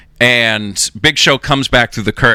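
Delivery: ordinary delivery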